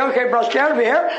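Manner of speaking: ordinary talk, nothing marked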